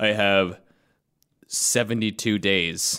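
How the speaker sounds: deep robot voice. Acting out a kid who can't wait, sounding like the Terminator. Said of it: "you sound like the terminator giving an ultimatum".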